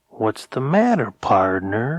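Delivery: slow drawl with long, stretched, unhurried vowels. Reading a tough stranger's line to the narrator: drawling. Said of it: "he drawled".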